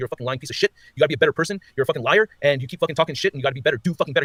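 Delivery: mock-ferocious, acted scolding tone, without yelling. Retelling kneeling in front of a man and telling him off, a fierce telling-off. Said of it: "I'm fucking telling him like ferocious".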